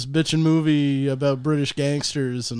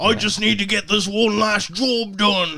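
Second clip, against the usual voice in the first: put-on Cockney accent, higher; 6 semitones higher than usual. Retelling Bob Hoskins's British gangster film role: Bob Hoskins Cockney voice. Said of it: "Is he in full Cockney accent?".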